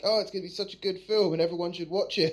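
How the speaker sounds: acted, dry sarcasm played straight in character. Retelling a promo that the crowd booed: imitating Daniel Bryan being sarcastic. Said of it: "you could tell in character he was being sarcastic".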